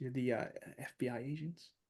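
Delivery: very quiet, dropped voice. Game narrator voices an older doctor addressing the agents, in a lowered voice. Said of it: "and she lowers her voice".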